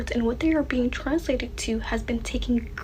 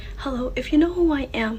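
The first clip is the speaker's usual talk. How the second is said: shy, timid, meek delivery. Greeting viewers at the start of a video: timid voice. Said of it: "the timid voice".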